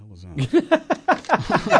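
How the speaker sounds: high, slow, laughing outburst of disbelief.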